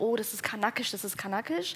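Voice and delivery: plain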